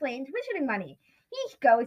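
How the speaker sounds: ordinary delivery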